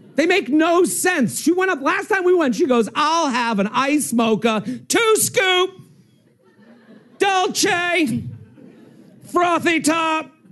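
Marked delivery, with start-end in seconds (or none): 4.9-10.3 slowly drawn-out call with steadily rising pitch. Retelling how mom orders at a coffee counter: imitating mom screaming coffee order. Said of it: "screams coffee ingredients".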